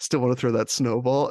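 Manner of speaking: normal talking voice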